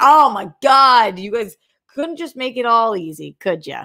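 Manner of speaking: mock spoiled, obnoxious bratty whine. Retelling own complaint about a show not being there: imitating own bratty complaint. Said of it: "I sound like an obnoxious fucking brat".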